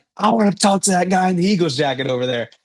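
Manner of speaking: mock calling out, high and light, as across a hall. Retelling the bishop calling out from across the church: imitating someone yelling. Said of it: "the bishop literally yells at me from across the church".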